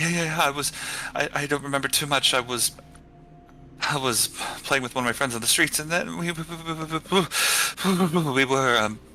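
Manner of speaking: terrified stammering. Narrating a story, voicing a human character answering in complete darkness, terrified. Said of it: "He's beyond terrified".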